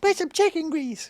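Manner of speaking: very high-pitched voice. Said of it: "That was my [name] impersonation".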